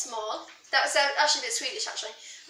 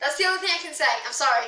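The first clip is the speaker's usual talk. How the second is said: plain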